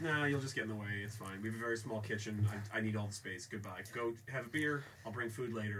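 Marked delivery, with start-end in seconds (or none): none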